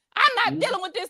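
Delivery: high-pitched yell. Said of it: "she would stand up and yell".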